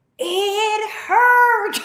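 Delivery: play-acted, very high, shrill, all-out top-of-lungs scream. Retelling how mom answered a question about the birth: imitating someone screaming. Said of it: "she screamed at the top of her lungs".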